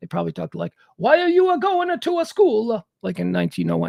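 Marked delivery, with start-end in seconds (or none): 1.0-2.9 put-on, slow, old New York Italian immigrant accent. Speaker imagines how people talked in new york in 1901: italian immigrant impersonation. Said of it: "That was an Italian immigrant impersonation".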